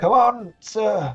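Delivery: put-on elderly man's voice. Role-playing a fight scene, speaking in an old man's voice. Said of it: "I don't know why I have an old man's voice now".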